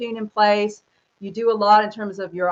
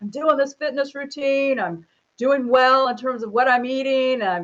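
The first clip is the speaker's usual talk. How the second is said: all pumped, gung-ho enthusiasm. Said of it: "all pumped, like".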